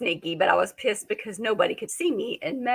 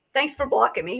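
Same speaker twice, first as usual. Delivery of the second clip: usual speaking voice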